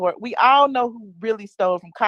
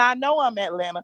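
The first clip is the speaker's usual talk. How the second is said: ordinary talk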